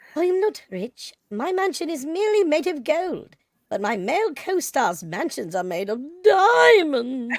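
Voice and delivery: attempted put-on British accent. Taking a turn reading the woman's line for the group, in a british accent. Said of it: "who wants to try their British accent?".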